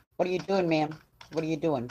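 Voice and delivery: ordinary talk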